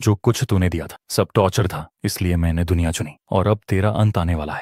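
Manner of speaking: ordinary delivery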